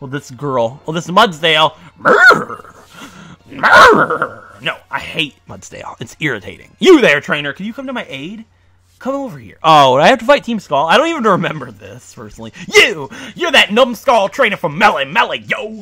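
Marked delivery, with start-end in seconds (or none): 12.7-15.8 pitched-up game-style grunting voice. Reading game dialogue aloud as a Team Skull grunt. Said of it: "Team Skull's fun to voice".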